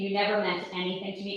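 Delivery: fast, dead-level, flat monotone. Retelling a surprise phone call where he reversed himself, in a monotone. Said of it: "in a monotone voice".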